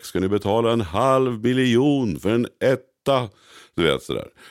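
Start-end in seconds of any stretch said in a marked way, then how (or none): 0.0-3.3 put-on high, incredulous, disbelieving shout. Retelling how a banker shouted at clients about an apartment price, re-enacting his shout. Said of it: "bankmannen bara skrek".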